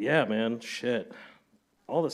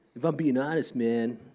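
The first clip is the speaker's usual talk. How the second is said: put-on higher, louder teenage voice. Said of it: "that's how, how I sounded".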